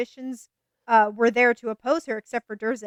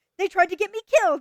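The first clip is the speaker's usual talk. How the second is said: put-on furious angry outburst, higher pitch; 8 semitones higher, 3 dB louder than usual. Retelling a book character's rant about the traitors: acting out a furious rant. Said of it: "He's so mad".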